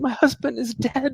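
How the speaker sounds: tearful, weeping voice, high and slow. Voicing a fleeing villager whose husband was killed: NPC crying. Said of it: "she's crying".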